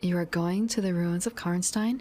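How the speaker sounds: plain reading voice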